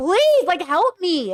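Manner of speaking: acted pleading, high-pitched and drawn-out begging. Describing how they yell at their partners when overwhelmed, reenacting their own yelling. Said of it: "I shouldn't start yelling".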